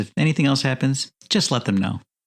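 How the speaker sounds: plain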